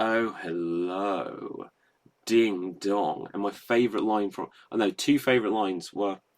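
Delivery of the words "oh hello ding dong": very slow, smooth-as-silk voice, stretched-out "hello". Imitating a video game character's voiced line: smooth Leslie Phillips voice. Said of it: "this smooth voice, like".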